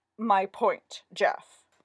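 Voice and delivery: voice sunk into deepest bass, dropped low. An actress answers her director to his face with a deep bass imitation of Geoffrey. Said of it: "dropping her voice into a deep bass".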